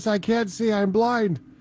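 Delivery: high, panicky, nervous babble, pitched way up. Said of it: "my buddy Corey was like".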